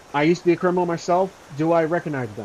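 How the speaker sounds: ordinary talk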